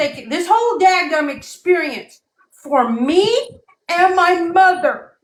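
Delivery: voice close to breaking down, barely holding together. Speaking about this experience for herself and her mother, close to breaking down. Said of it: "trying to say this without breaking down".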